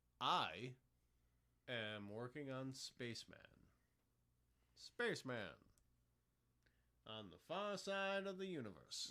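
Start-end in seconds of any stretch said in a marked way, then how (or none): 4.7-9.1 put-on old-time 1930s radio announcer delivery. Considering a voice for an intro and outro, the speaker tries it: 1930s announcer voice. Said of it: "I might actually do this voice".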